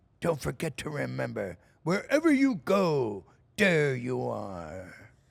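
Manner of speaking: loud cartoon voice, swooping big and slow. Asked for just one line from Tigger, doing Tigger voice. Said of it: "Just one from Tigger".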